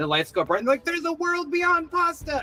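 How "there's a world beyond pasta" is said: pitched way up, very excited cry. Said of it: "they're getting really excited".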